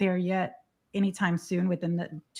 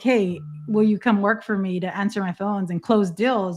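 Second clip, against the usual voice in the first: ordinary delivery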